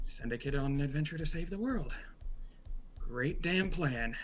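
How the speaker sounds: muttered aside under the breath, mumbling. Game master voicing a character reading his herb book, mumbling to himself. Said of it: "and just mumbles".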